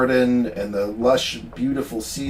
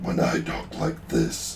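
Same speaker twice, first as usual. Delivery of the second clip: low, hushed, throaty guttural whisper; 13 semitones lower, 6 dB quieter than usual. Comparing low voices, the speaker demonstrates their own low guttural voice. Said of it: "that's what I get".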